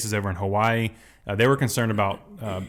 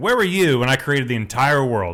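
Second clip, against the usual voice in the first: mock feisty deity voice, louder; 3 semitones higher, 4 dB louder than usual. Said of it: "I love it when God gets a little feisty".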